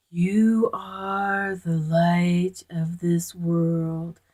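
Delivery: odd put-on deep voice, very slow. Recalling a message they recorded on a computer, in a weird deep voice. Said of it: "kind of a deep voice".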